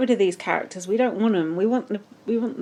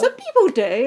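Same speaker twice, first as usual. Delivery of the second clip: ordinary talk, nothing marked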